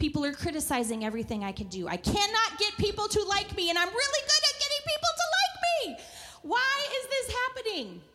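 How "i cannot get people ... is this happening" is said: mock frustrated rant, high and swooping. Speaker recalls praying to the Lord, retelling a frustrated prayer. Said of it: "and I was frustrated".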